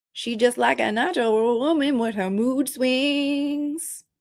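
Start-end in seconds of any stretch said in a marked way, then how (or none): none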